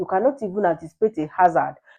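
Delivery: normal talking voice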